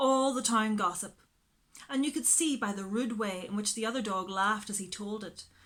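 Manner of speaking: plain reading voice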